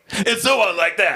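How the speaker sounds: ordinary talk, nothing marked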